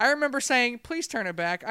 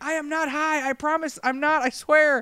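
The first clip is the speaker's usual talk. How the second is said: high, frantic, hysterical yelling; 5 semitones higher, 4 dB louder than usual. Recalling a bad trip, retelling hysterical yelling. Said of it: "I remember hysterically yelling".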